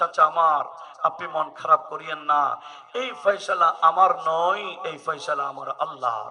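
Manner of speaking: soft, low, gentle, consoling and reassuring tone.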